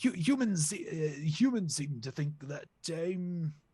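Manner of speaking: halting, slow, high-pitched put-on posh accent. Playing a character, the speaker slips back into a posh accent. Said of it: "I'm going posh again".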